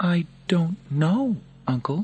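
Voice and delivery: anxious and nervous, pitched very high. Reading Lucius answering his uncle Commodus, nervous. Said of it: "said Lucius nervously".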